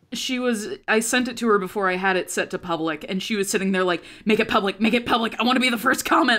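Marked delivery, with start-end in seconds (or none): 4.2-6.4 put-on, bubbling, super excited chatter. Retelling a reaction to a video link: imitating Viv super excited. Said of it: "super excited".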